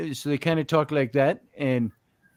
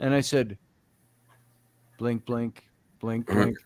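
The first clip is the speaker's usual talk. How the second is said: normal talking voice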